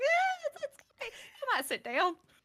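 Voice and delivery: voice climbing very high, swooping. Playing a character calming others and offering a seat: higher voice. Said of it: "And the voice gets higher".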